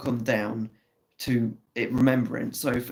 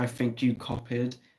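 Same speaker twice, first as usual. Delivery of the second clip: snooty, stuck-up, snobbish put-on voice; 4 dB quieter than usual. Retelling what he said about her test, imitating a snobbish man. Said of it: "in that snobbish ass voice".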